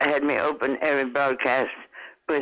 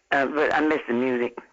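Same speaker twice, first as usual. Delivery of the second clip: ordinary talk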